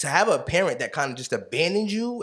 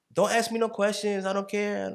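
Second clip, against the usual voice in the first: put-on woman's voice, pitched up; 8 semitones higher than usual. Retelling what a woman replied when he contacted her, imitating a woman's voice. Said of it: "I'm doing a voice again".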